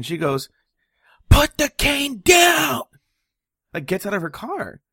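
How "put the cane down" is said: very high, slow, drawn-out shrieked scream. Telling a story about a woman and a man with a cane, retelling her scream. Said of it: "she starts screaming like".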